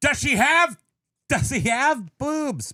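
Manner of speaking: very high, shrill, loud screaming voice. Retelling how a man reacted in a story, imitating someone screaming. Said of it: "He screamed".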